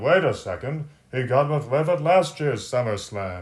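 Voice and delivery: listless, energy-drained, unenthusiastic play-by-play delivery. Imitating Michael Cole pointing something out: unenthusiastic Michael Cole impression. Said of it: "very anemically, very unenthusiastically, can point out".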